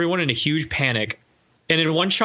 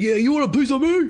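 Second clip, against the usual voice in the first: put-on high-pitched street-tough New Yorker kid; 9 semitones higher than usual. Retelling a movie scene, a kid fighting off a thug: imitating a tough New Yorker kid. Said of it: "but New Yorker kid".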